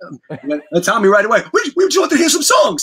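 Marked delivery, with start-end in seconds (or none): 1.5-2.8 put-on young boy's very high-pitched voice. Retelling what a young friend said to a rock star: high-pitched voice imitating Tommy. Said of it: "Tommy had his high-pitched voice".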